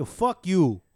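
New York accented speech.

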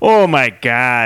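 put-on broad Chicago accent, laid on thick. Retelling a radio caller arguing with the hosts: thickest Chicago accent. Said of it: "in the like thickest Chicago accent".

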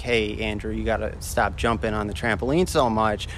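ordinary delivery

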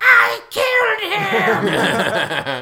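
very high, loud, swooping, screechy cartoon villain voice. Retelling a cartoon scene where Starscream answers Megatron: Starscream voice. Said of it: "Starscream talked like this".

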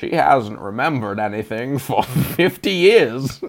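weighty, grave, prestige-film style line reading. Imagining an actor delivering a line: Morgan Freeman voice. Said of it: "do his Morgan Freeman voice and be like".

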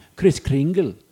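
put-on German accent. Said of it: "We're getting to hear everyone's German accent".

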